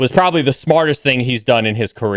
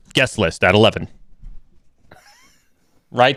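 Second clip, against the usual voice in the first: animated, swooping nightly news anchor delivery. Told to hype things like the nightly news, a speaker answers in a nightly news anchor voice. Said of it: "Only if you do it in that voice".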